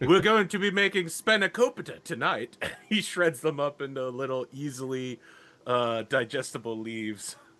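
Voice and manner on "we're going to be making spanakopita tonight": put-on raised, high British accent, tv-host style. Voicing Reginald as he looks directly at the camera, Reginald's British accent. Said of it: "He's British".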